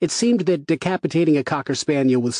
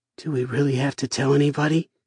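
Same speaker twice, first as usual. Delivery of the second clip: soft, hushed, miserable and unhappy voice. Narrator reads a character looking at the ground, asking in a soft, miserable voice. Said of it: "He asked in a soft, miserable voice".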